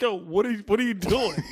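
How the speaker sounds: broken up by laughter. Retelling a cop who jumped out of his car, imitating a cop laughing while talking. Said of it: "He's laughing".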